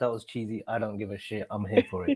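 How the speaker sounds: quiet defiant mutter.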